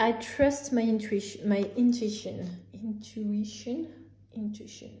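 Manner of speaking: English-accented speech.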